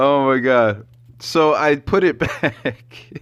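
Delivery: very slow words spoken through laughter. Telling the viewers what happened, laughing while talking. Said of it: "I can't stop laughing".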